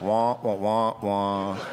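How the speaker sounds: put-on wah-wah grown-up voice. A runner mocks spin class instructors, Peanuts adult wah-wah voice.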